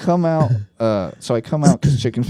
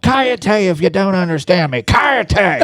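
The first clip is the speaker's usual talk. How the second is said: shouting, pitched higher; 8 semitones higher, 4 dB louder than usual. Retelling yelling at a wrestler in the ring: retelling own yell. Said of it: "And then I yell".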